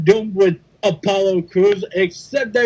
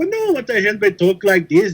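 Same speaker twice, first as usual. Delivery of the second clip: Irish accent, rattled off quickly. Trying out accents with the others, in an Irish accent. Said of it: "I'm part Irish".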